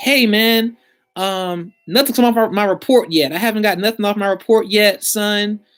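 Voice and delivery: put-on angry fed-up voice. Retelling what a customer says to the company, imitating a mad customer. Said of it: "you might just be mad and in your zone".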